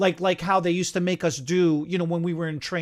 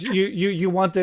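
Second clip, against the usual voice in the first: ordinary talk, nothing marked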